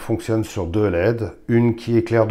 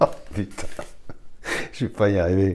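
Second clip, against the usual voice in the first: laughing while talking, quieter; 2 semitones lower, 5 dB quieter than usual. Showing how a lamp's two modes work, the speaker talks while laughing. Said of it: "Je me fais rire moi-même".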